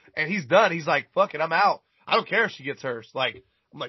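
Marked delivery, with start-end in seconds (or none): none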